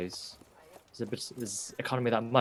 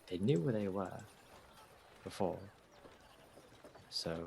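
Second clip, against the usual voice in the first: quiet half-whispered delivery; 3 semitones lower, 9 dB quieter than usual. Looking over at Ava and speaking in character: half-whispering. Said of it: "kind of just whisper to her".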